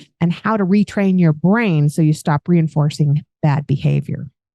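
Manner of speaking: ordinary delivery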